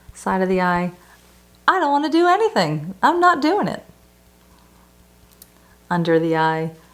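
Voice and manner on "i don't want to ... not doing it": smiling sarcasm, big fake smile, higher. Leading a tapping exercise with a huge fake smile: sarcastic, with big fake smile. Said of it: "I call this the sarcastic smile technique".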